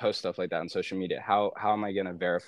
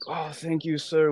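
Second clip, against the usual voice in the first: imitated French accent; 9 semitones higher, 4 dB louder than usual. Retelling how they said thanks after a package drop-off, imitated French accent. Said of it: "like with their French accents".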